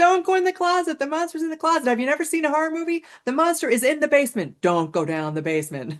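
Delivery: frantic, very high, swooping screams. Describing a horror movie, the speaker acts out screaming at the heroine. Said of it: "You're screaming at her".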